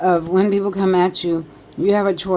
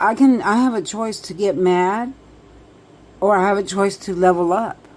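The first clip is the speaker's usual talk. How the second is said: usual speaking voice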